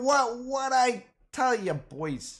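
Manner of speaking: bad put-on Brooklyn accent. Celebrating stocks that doubled up: bad put-on brooklyn accent. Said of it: "I can't even do that Brooklyn accent".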